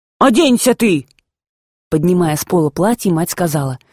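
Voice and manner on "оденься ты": loud, forceful shouting. Reading a grandmother calling across the room to the mother, shouting. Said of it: "Бабушка крикнула матери".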